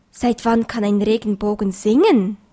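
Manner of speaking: plain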